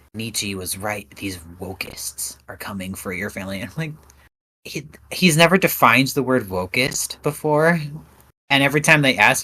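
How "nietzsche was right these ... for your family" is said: mock dead-serious, lower and much quieter. Quoting a man who never defines wokeist, in a mock dead-serious tone. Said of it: "with the most serious tone of voice ever".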